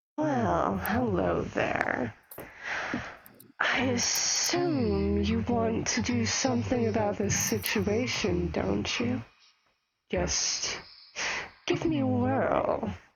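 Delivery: voice of a talking enchanted sword. Voicing a key sword that a player just picked up: talking sword voice. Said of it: "you hear this voice".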